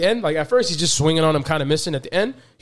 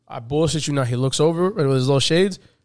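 normal talking voice

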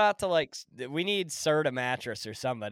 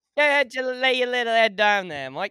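put-on Australian-sounding accent, much higher; 10 semitones higher, 8 dB louder than usual. Trying out an accent on request, Australian-sounding accent. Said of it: "You sound more like an Australian right there".

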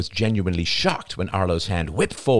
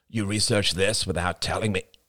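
ordinary delivery

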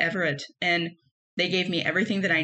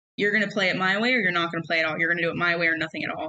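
hard, demanding, fast and harsh delivery. Retelling what a demanding man said during rehearsals, imitating a harsh voice. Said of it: "his speech was very harsh".

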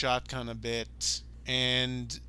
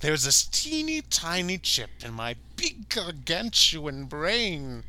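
over-the-top villain voice, swooping pitch; 4 semitones higher than usual. Quoting a movie villain's monologue line: hammy bad-guy Bill Moseley imitation. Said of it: "He goes full on hamming it up".

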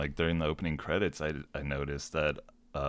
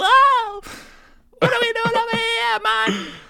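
wild shrieking yell, very high and very loud; 11 dB louder than usual. Retelling how a character screamed: imitating a scream.

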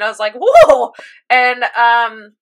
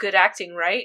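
mock deadpan delivery, lower and quieter; 4 semitones lower, 7 dB quieter than usual. Retelling a character who stops yelling in pain and speaks: retelling a deadpan line. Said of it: "just deadpans and goes".

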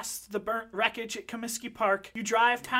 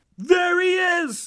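very loud, high, officer-style yell; 8 semitones higher, 8 dB louder than usual. Narrator voicing officers stepping out of a nightclub, shouting. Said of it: "They shout".

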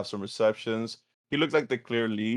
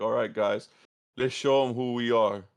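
stern, emotionless deadpan with no feeling at all. Retelling an uninspiring pregame pep talk: imitating Trevor Lawrence, no emotion. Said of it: "no emotion whatsoever".

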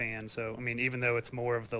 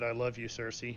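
ordinary talk

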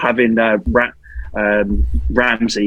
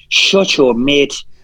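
terrible fake put-on Irish accent; 4 semitones higher than usual. Asked about Coutinho, borrowing Conor McGregor's words: bad Conor McGregor impression. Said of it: "Was that an Irish accent?".

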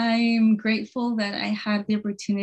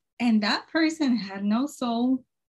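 plain

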